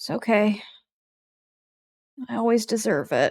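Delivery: sighed-out delivery. Narrator voicing a man lying on the ground as a dream fades, sighing. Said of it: "just sighing".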